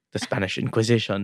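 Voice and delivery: put-on English spoken in an Italian accent. Retelling a film moment, imitating Russell Crowe's Italian accent. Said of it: "in an Italian accent".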